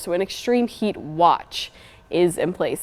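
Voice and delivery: watch stressed, said slowly.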